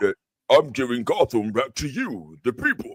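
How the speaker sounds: very low, extra-bass voice, rising. Speaker, asked by others for extra bass, tries the line again; extra bass voice. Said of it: "Extra, extra bass".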